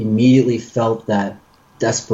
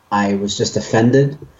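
normal talking voice

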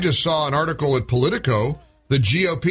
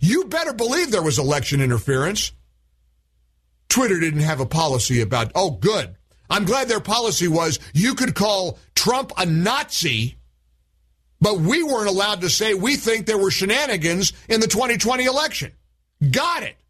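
heated, fired-up, angry, worked-up rant; 4 semitones higher than usual. Speaking to an audience about Twitter and election interference: fired up. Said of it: "but I'm fired up about this".

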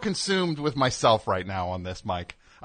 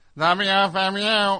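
put-on squeaky voice, much higher pitch; 7 semitones higher than usual. Replaying his first call to the show, imitating own old squeaky voice. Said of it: "Listen to that squeaky voice I had".

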